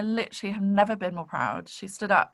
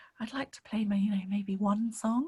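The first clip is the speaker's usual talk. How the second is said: very quiet, soft, hushed, barely-there voice; 4 dB quieter than usual. Teacher retells what students say they want from the course: very quiet voice. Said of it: "in this very quiet voice".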